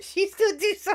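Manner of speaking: talking through laughter. Reacting to a story about a threatening lamp, laughing while talking. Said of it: "I'm laughing only because".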